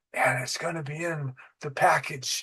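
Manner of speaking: soft, murmured, half-whispered under the breath. Retelling what two people whispered on a recorded jail phone: imitating a whisper. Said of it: "kind of whispering".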